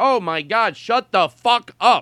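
high, loud, slowed-down dismissive outburst. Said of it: "when people were like".

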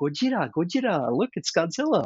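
play-acted eager little boy, high, swooping, worked up. Retelling a little boy pointing at dinosaur pictures: imitating an excited little boy. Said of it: "he got all excited".

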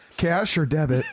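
flirtatious come-on voice. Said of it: "it was the fucking tone of her voice".

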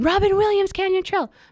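put-on very high-pitched scream. Retelling being attacked on a trail: reenacting screaming. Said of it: "So I started screaming".

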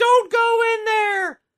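loud, high-pitched screaming.

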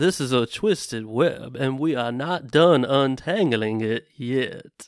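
loud, drawn-out, heavy Southern drawl. Asked to send everybody home, signing off in a Benoit Blanc Southern drawl. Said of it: "your best Southern drawl".

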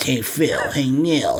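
put-on high-pitched, slow, weird baby voice. Describing the twins on a cartoon, imitating Rugrats twins Phil and Lil. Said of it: "they talk like this".

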